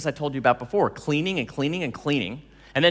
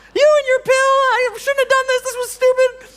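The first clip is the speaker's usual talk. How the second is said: shrill, very high, loud, badly done woman's voice; 9 dB louder than usual. Retelling Danielle's complaint after she quit her job: imitating Danielle in a woman's voice. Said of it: "There's my voice again. I'm sorry I'm doing women's voices".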